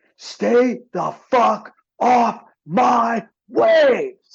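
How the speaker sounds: shrill, very high, very slow, drawn-out screaming. Retelling how a young surfer paddled out after a wave: imitating someone screaming. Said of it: "he starts screaming".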